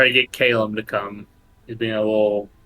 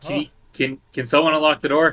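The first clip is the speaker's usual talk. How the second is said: halting, stumbling voice calling out; 4 semitones higher than usual. Playing a character with full hands, shouting at a locked door. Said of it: "I'm shouting, like, at the door".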